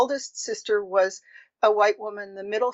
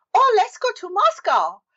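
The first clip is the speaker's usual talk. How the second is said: put-on thick Chinese accent, very high-pitched, loud; 13 semitones higher, 5 dB louder than usual. Retelling an actor's lines in a play: imitating a heavy Chinese accent. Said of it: "speak English in a very heavy Chinese accent".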